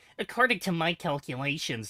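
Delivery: know-it-all geek talk. Imagining Arcade Gannon showing up with a new voice, Arcade Gannon as stereotypical nerd. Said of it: "he has like the the stereotypical nerd voice".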